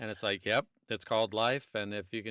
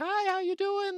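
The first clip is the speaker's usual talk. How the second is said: very high, super high-pitched put-on woman's voice; 3 dB louder than usual. Discussing doing female voices as a guy, the speaker tries a super high-pitched female voice. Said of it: "I should do it all a super high pitch".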